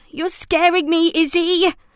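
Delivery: high-pitched, whiny, whining tone. Narrator reads Mo speaking to Izzy, whining. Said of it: "Mo whined".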